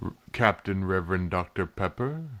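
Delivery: quiet, slow, deliberate voice. Voicing an official looking up from his papers: quietly, as the official at the desk. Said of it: "he just sort of quietly goes".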